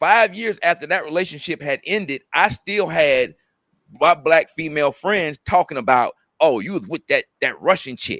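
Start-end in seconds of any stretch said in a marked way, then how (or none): 6.4-8.2 bitter, venomous, spiteful, vitriol-laced tone. Speaker retelling what his female friends said about his past relationship, with put-on vitriol. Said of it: "with vitriol".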